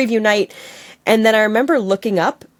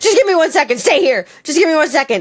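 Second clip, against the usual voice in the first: mock flustered, panicking, high-pitched pleading; 8 semitones higher than usual. Retelling stalling a drunk woman who tried to kiss: imitating own panicked voice. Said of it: "I panicked again and was like".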